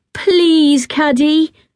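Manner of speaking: high, begging, imploring, pleading tone. One girl urges another who refuses to talk about it, begging. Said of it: "begged Ruby".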